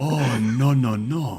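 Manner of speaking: very slow, dragged-out drawl with weird intonation. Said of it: "why do you gotta say it like that".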